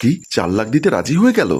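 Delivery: ordinary delivery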